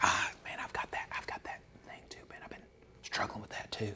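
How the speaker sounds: very quiet, hushed, under-the-breath whisper. Acting out someone admitting the same struggle, in a hushed voice. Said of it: "with a hushed voice".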